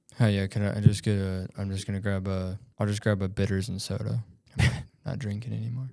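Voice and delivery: hushed, quiet half-whispered aside. Ordering a drink at a loud bar, half-whispering. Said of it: "What'd you whisper?".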